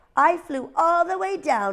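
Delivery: proud, high and drawn out. Reading Ozzy telling his mother a lie, spoken proudly. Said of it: "he said proudly to his mother".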